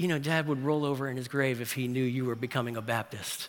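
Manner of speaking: tongue-in-cheek half-whisper, very soft, barely audible. Retelling what a sister half-whispered before a prayer: imitating a half-whisper. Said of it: "just whispers in my ear".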